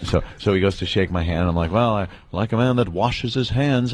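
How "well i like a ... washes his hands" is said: ordinary delivery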